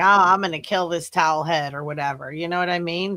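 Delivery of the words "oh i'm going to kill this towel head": put-on snide tone. Imitating a remark an officer might make: imitating a snide remark. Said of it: "some snidey shit".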